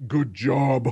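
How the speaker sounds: low, deep, encouraging and approving voice. Imitating the game cheering the player on: deep booming voice. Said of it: "with that deep booming voice".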